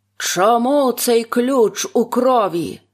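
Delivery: slow, menacing, threatening, accusing tone. A husband holds up the key and asks his frightened wife a menacing question. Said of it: "синя борода грізно спитав у переляканої дружини".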